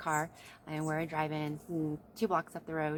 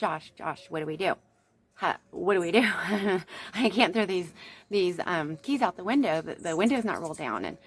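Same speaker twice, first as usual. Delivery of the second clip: mock frantic, loud, panicked, stammering, pleading voice; 2 semitones higher, 7 dB louder than usual. Retelling being held at gunpoint by police, asking josh what to do: retelling own panicked pleading. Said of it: "So I'm freaking out, going".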